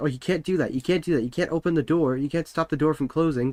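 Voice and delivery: playful, needling, mocking teasing tone. Retelling how a hotel staffer blocked the elevator: imitating a teasing tone. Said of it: "he was teasing us".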